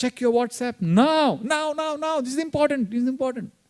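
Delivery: loud, high, pushy, insistent voice. Acting out the mind's voice interrupting meditation: loud, fast inner voice. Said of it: "it's loud, it's fast".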